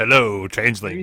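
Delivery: imitated, over-the-top, super smooth movie voice. Imagining how a character from the show might sound: imitating a super smooth movie voice. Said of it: "super smooth, movie voice".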